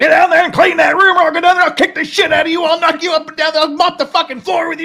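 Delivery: very loud, shrill, high drill sergeant bellow. Retelling what your dad said after repeated requests, in a drill sergeant voice. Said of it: "He starts getting into that drill sergeant voice".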